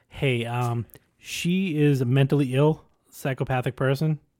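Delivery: ordinary delivery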